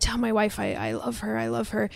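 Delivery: whispering. Recapping a scene where a man who can't yell speaks to the woman who found him, whispered.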